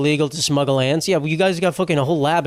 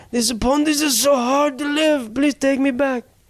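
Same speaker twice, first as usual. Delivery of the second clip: put-on, very high-pitched elderly Japanese accent; 10 semitones higher than usual. Voicing a reptile in a pond, the speaker uses an old Japanese accent. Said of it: "Is that a good ja- old Japanese accent?".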